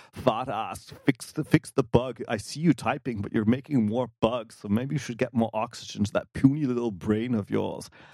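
barking, harsh, commanding berating tone. Joking about listeners barking at another speaker: Arnold Schwarzenegger style voice. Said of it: "bark at you in an Arnold Schwarzenegger style voice".

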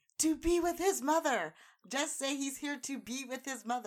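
mock exasperated, high-pitched screaming. Retelling how a frustrated guy screamed at him, retelling a scream. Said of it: "he screamed at me".

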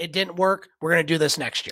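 ordinary delivery

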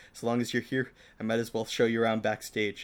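ordinary delivery

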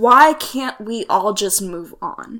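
loud, fed-up, exasperated outburst. Speaker quoting the grave robber at the end of a movie, retelling an exasperated line. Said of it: "says in an exasperated voice".

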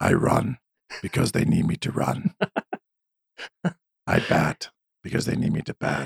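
whispered, hushed, breathy dark superhero voice. Asked by another speaker about a Batman voice, showing off a Batman voice. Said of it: "I could do Batman voices".

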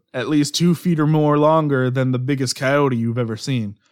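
usual speaking voice

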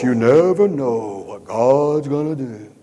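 loud, sugary, syrupy, sanctimonious tone. Speaker mimicking how some people say it, in a mock-syrupy spiritual tone. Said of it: "say it with a real syrupy, spiritual overtone in their voice".

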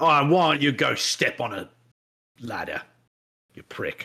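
playful fake British accent, clearly put on. Joking about british insults, the speaker tries a mock british accent. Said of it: "that's a fun accent".

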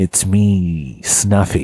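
low character voice with drawn-out "me". Voicing a puppet character for another speaker: Jack Nicholson voice as Snuffleupagus. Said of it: "Jack Nicholson as Snuffleupagus".

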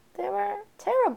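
exaggerated, high, loud mock delivery of terrible.

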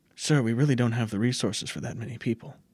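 stage half-whisper in a character voice. Voicing a treasurer who warns a lord about resources: half-whispering in character. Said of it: "He said that in a whisper mode".

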